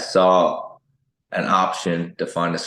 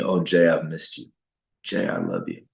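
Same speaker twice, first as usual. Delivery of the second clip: whispering. Retelling what a sick mother said while slow dancing: imitating a whisper. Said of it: "she whispered to me".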